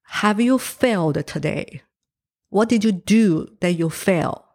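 usual speaking voice

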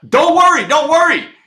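shrill, very high, loud scream. Speaker retelling being pinned by a screaming riot cop, retelling his own scream. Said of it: "I scream back at this guy".

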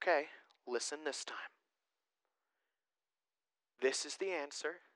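hushed, soft, parent-like voice. Speaker acts out God answering humanity again, in a parenting voice. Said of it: "in his best parenting voice says".

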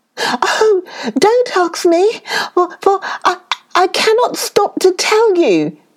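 very high, panicked, frightened little shriek. Narrator reads the fleeing rabbit answering another rabbit, shrieking. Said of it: "there lived a very timid little rabbit who was always trembling for fear that something terrible was going to happen to him".

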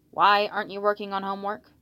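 ordinary delivery

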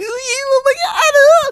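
mock excited man's voice. Telling how Henry reacted when she arrived, imitating Henry's giddy excitement. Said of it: "He's like all giddy and shit".

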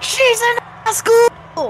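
very high, slow, drawn-out megaphone scream. Retelling someone's announcement to a cheering crowd: retelling a megaphone scream. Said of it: "screams through the megaphone".

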